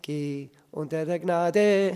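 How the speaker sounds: slow, natural stress on Gnade, not on der. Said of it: "Ich hätte die Gnade betont".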